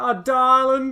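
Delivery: bad put-on Southern accent pitched very high. Imitating a female X-Men cartoon character: attempted Southern accent. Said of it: "I can't do Southern".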